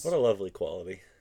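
dry sarcastic tone. Reacting to a story about a controlling ex: sarcastic. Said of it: "I was saying that more in a way of, like, sarcastically".

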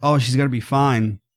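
plain

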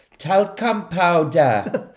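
Welsh accent. Quoting the easiest movie line to say in a welsh accent. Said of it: "the easiest one to say in a Welsh accent is".

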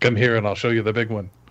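ordinary talk

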